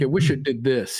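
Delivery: ordinary delivery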